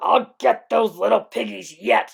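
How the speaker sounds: rough, very loud snarling growl. The Rex, after the little dinos slip from his fingers, growling. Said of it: "he growled".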